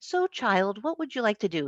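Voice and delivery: put-on South African accent. Retelling a mentor's question to graduating students, in Sidney Lewis's South African accent. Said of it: "He had this wonderful South African accent".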